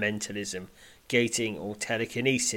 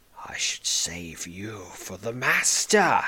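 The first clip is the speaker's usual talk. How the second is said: growled goblin-like voice; 2 semitones lower than usual. Narrating a fight, the goblin Fearspit speaks to the player: Fearspit growling. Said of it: "he growls".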